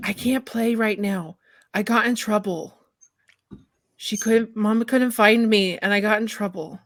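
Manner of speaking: hushed whispering voice. Voicing a hidden creature answering the player: whispering. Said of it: "a whisper".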